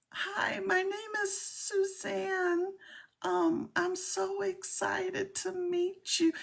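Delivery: terrible fake voice, very high, soft, very slow. Retelling leaving fake voice messages on Instagram, terrible high-pitched soft voice. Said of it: "really terrible high pitched voice, talking soft".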